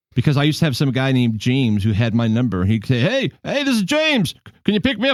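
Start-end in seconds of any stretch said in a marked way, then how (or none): 3.0-5.1 very high, mock drunk-sounding voice. Retelling a stranger's late-night call asking for a ride: imitating James drunk. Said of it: "like he was drunk".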